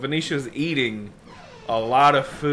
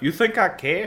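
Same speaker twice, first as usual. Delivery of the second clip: imitated Scottish accent, higher; 7 semitones higher than usual. Retelling a character's reply from a show scene: put-on Scottish accent. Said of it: "It's Scottish".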